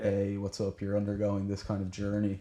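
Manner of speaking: ordinary delivery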